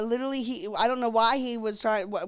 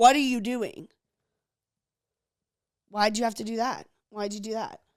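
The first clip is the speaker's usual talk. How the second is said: put-on rude voice. Telling the listener how they spoke while the speaker tried to calm down, mimicking a rude voice. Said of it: "in a rude voice saying".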